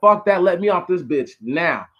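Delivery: put-on angry yelling. Retelling a bus passenger demanding to be let off: imitating someone yelling. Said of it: "He's yelling at her".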